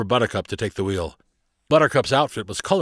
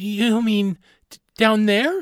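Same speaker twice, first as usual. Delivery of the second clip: very high, slow voice, faintly trembling; 12 semitones higher than usual. Carly, looking at a board past the ship's edge, asks Barnabas with her voice shaking slightly. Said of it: "her voice shaking just a little bit".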